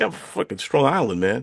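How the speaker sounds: cocky, proud, bold, swaggering boastful tone. Showing how someone says they're from Strong Island: with chutzpah. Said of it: "you say it with a little little bit of like chutzpah".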